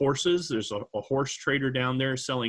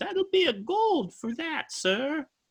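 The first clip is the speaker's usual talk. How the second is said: very high female character voice. The narrator voices the shopkeeper answering a customer: female shopkeeper character voice. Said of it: "And she says".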